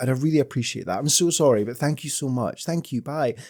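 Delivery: mock, put-on polite tone. Acting out asking people to turn their video down: mock polite request.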